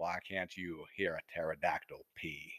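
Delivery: very deep, hushed, slow narrating voice. Retrying the requested joke in a put-on voice: Morgan Freeman voice. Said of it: "Morgan Freeman".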